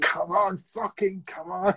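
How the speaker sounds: mock, high, excited urging yell. Speaker recalls yelling along to a record at home, retelling own shouting. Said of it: "shouting at the top of my voice".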